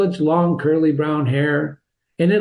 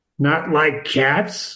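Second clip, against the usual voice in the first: impassioned, passionate, indignant cry. Narrating a story, voicing the mouse answering Alice in a shrill, passionate voice. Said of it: "cried the mouse in a shrill, passionate voice".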